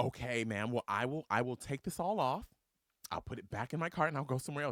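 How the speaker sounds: put-on nervous voice. Retelling being confronted by a woman at a two-item lane, acting out own nervous reply. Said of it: "my chest tightened".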